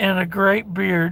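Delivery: ordinary delivery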